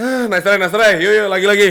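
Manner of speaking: very loud, high, irritated, egging-on tone. Acting out how someone says 'nice try' without meaning sarcasm, mock-annoyed 'nice try'. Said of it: "nice try sebel".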